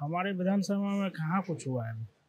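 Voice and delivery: very soft, quiet, hard-to-hear speech.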